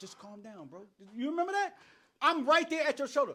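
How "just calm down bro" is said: calming, soothing voice, higher and quieter. Retelling trying to calm down a friend who refused: retelling own calming plea. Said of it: "I'm trying to talk to him like".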